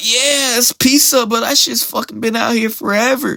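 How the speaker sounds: very high-pitched, fed-up griping grumble. Retelling a viral video, imitating the girl filming the buffet. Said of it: "She'll be like".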